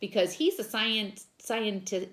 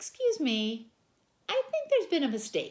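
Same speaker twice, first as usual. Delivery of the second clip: extremely polite voice, pitched up higher; 6 semitones higher than usual. Reading a story aloud, the narrator corrects a teacher: most polite voice. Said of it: "in my most polite voice".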